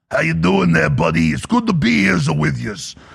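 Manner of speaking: put-on New York mobster accent, wiseguy style. Imagine getting up to give a speech and trying a Yankee accent like The Sopranos. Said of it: "I try to do a Yankee accent, so like the Sopranos".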